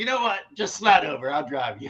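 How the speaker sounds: put-on Louisiana accent in a character voice. Retelling a comedy sketch about a Louisiana guy: imitating a Louisiana accent. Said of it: "and he had the accent".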